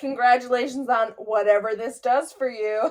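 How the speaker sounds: play-acted, pointed, backhanded, passive-aggressive tone. Acting out walking away from someone with a parting line, passive-aggressive. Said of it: "It's so fucking passive aggressive".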